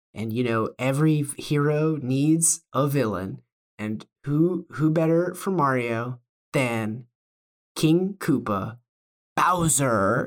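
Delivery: slow, halting, drawn-out delivery with odd pauses. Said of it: "develop the Mario voice".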